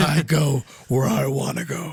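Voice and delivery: deep voice, very slow, every word dragged. Quoting Wolverine from the X-Men animated series: Wolverine deep voice. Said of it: "With that deep voice".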